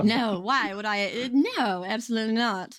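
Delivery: sarcastic delivery after laughing. Told they sound a little bitter, denying it; sarcastic denial. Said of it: "denies bitterness with a laugh, clearly sarcastic".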